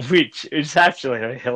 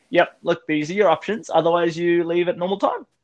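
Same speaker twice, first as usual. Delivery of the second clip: put-on light, casual, nonchalant tone, pitched up; 6 semitones higher than usual. Retelling how a friend gave a staff member two options: imitating a nonchalant tone. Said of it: "for you to say it in such a nonchalant".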